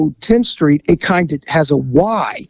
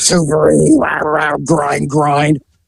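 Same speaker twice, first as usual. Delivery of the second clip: put-on woman's voice through gritted teeth, much slower. Retelling running into Ashley on Tenth Street, imitating Ashley grinding her teeth. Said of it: "she's like grinding her teeth".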